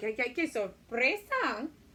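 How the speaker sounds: really silly, loud, gasping surprise at the end.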